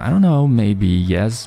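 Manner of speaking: rambling, hedging, with slowly drawn-out fillers.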